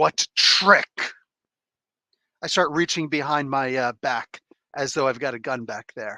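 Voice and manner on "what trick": intimidating, menacing, threatening voice. In character, intimidating a cowering man about a trick: intimidating, threatening. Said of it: "you're trying to intimidate him?".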